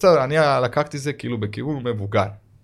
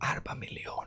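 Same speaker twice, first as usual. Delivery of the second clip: put-on quiet voice, much quieter. Retelling how a man named a raised price, retelling his quiet words. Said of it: "ככה בשקט הוא אומר לי".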